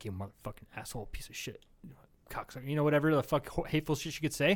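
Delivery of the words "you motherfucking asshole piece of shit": muttering under breath, lower and much quieter. Retelling a story, voicing a woman who turns and curses a man, muttering curses. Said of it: "the woman would turn and start muttering".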